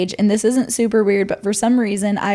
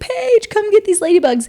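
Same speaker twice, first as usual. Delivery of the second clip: put-on scared scream, near tears, higher pitched; 11 semitones higher than usual. Retelling how Bailey reacted to ladybugs in the shower: imitating Bailey screaming. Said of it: "Bailey would start screaming and, like, almost crying".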